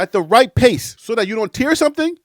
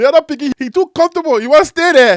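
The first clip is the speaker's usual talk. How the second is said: Liberian English accent; 4 semitones higher, 4 dB louder than usual. Acting out an argument as it would go with a Liberian: speaking Liberian English. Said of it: "If I was having this argument with a Liberian".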